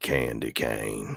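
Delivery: very low, deep, soft country-accent voice. Redoing the truck's line from a movie, now in a country accent. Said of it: "let me do it with a country".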